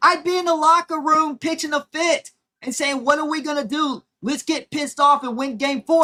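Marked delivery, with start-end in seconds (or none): none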